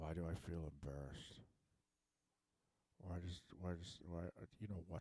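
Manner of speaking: speaking in a whisper. Speaker making videos in the basement while everyone upstairs is awake, whispering. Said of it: "I have to whisper".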